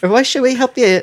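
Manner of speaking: put-on tiny, squeaking, very high British accent. Voicing a talking roach in a story, the speaker uses a high squeaky british voice. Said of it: "It's high and squeaky voice".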